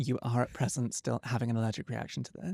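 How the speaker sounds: calm, soft, soothing ASMR massage voice. Retelling what the woman giving her a massage said, in an ASMR massage voice. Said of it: "still in the A S M R massage voice".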